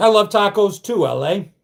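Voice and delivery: ordinary talk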